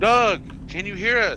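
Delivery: high, loud, carrying yelled call.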